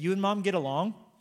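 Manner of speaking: dry, matter-of-fact, deadpan delivery. A parent quotes the child's reply to a point about opposites, retelling a deadpan reply. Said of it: "deadpan response says".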